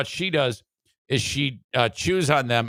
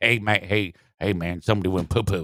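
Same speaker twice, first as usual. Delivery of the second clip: put-on casual, rural-sounding Southern accent; 5 semitones lower than usual. Imitating a family member announcing dog poop: imitating someone's southern accent. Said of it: "he does speak with a, uh, Southern accent".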